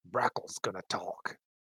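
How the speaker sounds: hushed, breathy whisper full of awe. Someone in a hushed tavern whispers to the others, in an awed whisper. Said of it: "in an awed tone".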